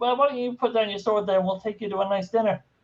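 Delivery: high New Jersey henchman voice. Playing one of the henchmen, in a new jersey henchman voice. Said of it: "shipped over from uh, New Jersey Central Casting".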